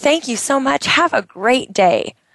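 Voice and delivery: full of bright, energetic enthusiasm. Demonstrating how to thank a cashier, enthusiastic and energetic. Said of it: "where's your energy?".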